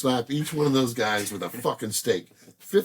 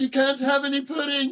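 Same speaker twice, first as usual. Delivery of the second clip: put-on, pitched-up English accent; 14 semitones higher than usual. Asked to do an English accent, quoting a line from The Wall; English accent. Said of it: "Can you do an English accent?".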